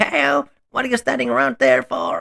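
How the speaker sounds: very high, rough, strained, throat-squeezed voice. Voicing Vern in a scene with Teleford: Vern's voice. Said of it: "It really hurts my throat".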